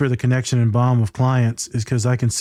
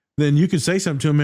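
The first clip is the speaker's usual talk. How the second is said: ordinary talk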